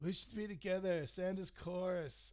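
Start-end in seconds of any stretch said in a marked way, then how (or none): 0.0-1.1 put-on whiny voice, higher. Mocking a whiny movie love scene: mock whining as Anakin. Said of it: "whine about fucking".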